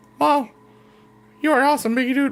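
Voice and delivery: very high-pitched cartoonish voice. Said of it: "why did you sound like a variant of Mickey Mouse".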